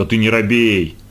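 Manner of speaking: ordinary delivery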